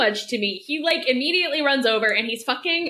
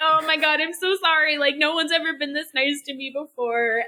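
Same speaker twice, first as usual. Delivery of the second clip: put-on crying character voice, pitched higher; 3 semitones higher than usual. Recapping a scene, the speaker acts out Komugi's lines: imitating Komugi crying. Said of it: "Komugi just starts crying and going like".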